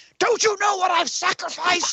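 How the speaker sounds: high, unhinged, mad snarling voice. Describing a board meeting scene from the film, imitating Willem Dafoe snarling. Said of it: "and he's snarling".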